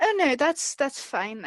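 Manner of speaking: mildly disappointed, slightly let-down, dismissive tone. Voicing a character who turns down an escort home: disappointed. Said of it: "a little disappointed, and she's like".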